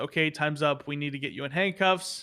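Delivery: ordinary talk, nothing marked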